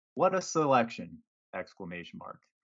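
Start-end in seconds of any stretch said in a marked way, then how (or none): 0.2-1.2 play-acted ironic admiration, dry and sarcastic, not meant. Reading aloud own earlier tweet: retelling own sarcastic tweet. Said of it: "with a dose of sarcasm here".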